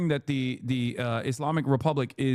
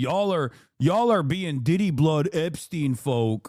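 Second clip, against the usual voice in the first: put-on nine-year-old child voice, louder; 3 semitones higher, 4 dB louder than usual. Mocking a chatter who came into the chat, imitating a chatter talking like a nine-year-old kid.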